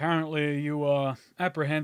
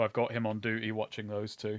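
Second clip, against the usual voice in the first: plain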